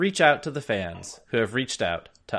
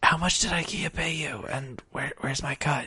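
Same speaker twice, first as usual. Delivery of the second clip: hushed whisper, higher pitch; 2 semitones higher, 3 dB quieter than usual. A podcast host whispers to the co-host so the listeners can't hear: whispering. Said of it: "I'm whispering so".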